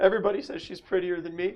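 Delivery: on the verge of tears. A storyteller voices a girl who starts tearing up over Alicia, tearful. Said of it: "she just starts tearing up".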